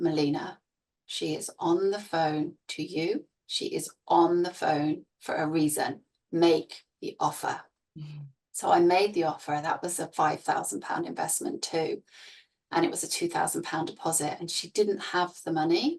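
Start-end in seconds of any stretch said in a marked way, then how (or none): none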